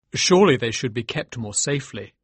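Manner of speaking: ordinary delivery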